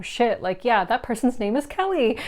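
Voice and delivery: ordinary talk, nothing marked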